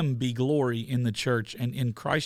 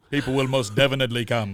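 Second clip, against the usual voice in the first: deep film-trailer style voice; 4 dB louder than usual. Quoting a movie line after offering to channel a James Earl Jones voice. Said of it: "I would channel my James Earl Jones voice".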